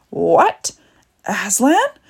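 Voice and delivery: sudden, loud, swooping outcry. Narrator reads the queen reacting to Edmund's news, crying out. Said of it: "cried the queen".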